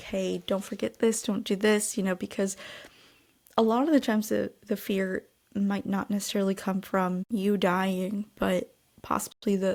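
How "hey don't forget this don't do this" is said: imitated begging and pleading tone. Retelling a clip of someone saying goodbye to her granny: imitating someone begging and pleading. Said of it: "begging and pleading".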